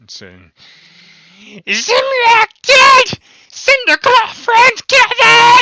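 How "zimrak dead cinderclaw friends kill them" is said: put-on very high, very loud, shrill old goblin shriek. Narrating the scene, a goblin shouts from the back of the line: screaming older goblin voice. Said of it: "this older voice, like screaming from the back of the goblin line".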